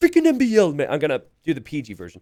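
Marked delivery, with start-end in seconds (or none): 0.0-0.9 very high, loud ranting voice. Retelling Hart's rant about a player, doing a Hart impression. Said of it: "I'm gonna try and do my best Hart impression here".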